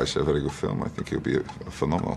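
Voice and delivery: breathy, hushed put-on voice, near a whisper. Doing impressions on request: Sean Connery voice. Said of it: "Sean Connery".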